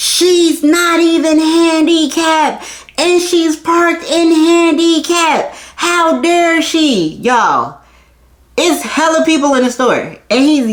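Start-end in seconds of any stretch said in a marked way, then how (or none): 0.0-7.1 slow high-pitched yelling. Retelling how a man rode past in the store: imitating a man yelling.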